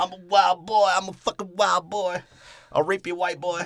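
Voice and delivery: put-on very high-pitched, loud voice in a Jamaican accent. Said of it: "[name]'s Jamaican accent".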